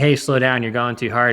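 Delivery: plain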